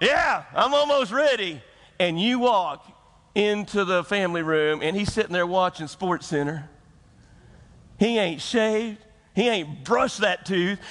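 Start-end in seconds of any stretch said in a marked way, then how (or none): 0.0-1.6 acted-out, pitched-up yell. Acting out a husband answering about being ready for church: imitating someone yelling. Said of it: "and he yelled".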